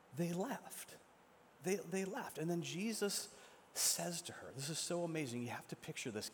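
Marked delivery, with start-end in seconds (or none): 0.1-2.3 dazed, stunned, disbelieving voice. Retelling a story, a woman answering in complete disbelief: imitating stunned disbelief. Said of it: "this woman is in complete disbelief".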